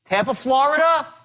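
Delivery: questioning upward lift on "Florida". Demonstrating how to get a micro agreement on a call: rising pitch at the end. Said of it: "When you raise your voice up like that".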